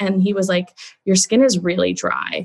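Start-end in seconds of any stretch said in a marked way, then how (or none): 1.0-2.4 mock, very judgmental tone. Quoting what the dermatologist said at a skin screening, mimicking a very judgmental tone. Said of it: "in this sort of like very judgmental tone".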